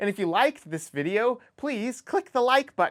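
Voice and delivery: high voice, cracking and breaking mid-line. Video creator asking viewers to like the video: voice cracking. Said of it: "my voice just cracked".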